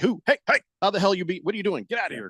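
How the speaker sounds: high, yappy, barking dog voice. Voicing the dog that barks at people in their own driveway: voicing a barking dog. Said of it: "he barks at them like".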